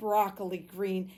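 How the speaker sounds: ordinary delivery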